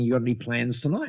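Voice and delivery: ordinary talk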